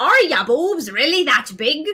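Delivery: put-on kind of Scottish accent. Reading out a chat viewer's question in kind of a Scottish accent. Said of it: "kinda like a Scottish accent".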